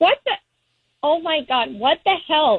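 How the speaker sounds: stunned, upset, high-pitched outburst of disbelief. Reacting live to hearing of another woman's name: shaken and upset. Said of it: "I'm, like, shaking right now".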